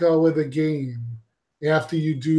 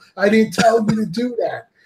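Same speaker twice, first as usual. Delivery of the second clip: screaming, higher; 6 semitones higher than usual. Retelling the camera switching mid-battle: imitating own screaming at TV. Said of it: "I'm screaming at my T V".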